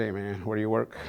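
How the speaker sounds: normal talking voice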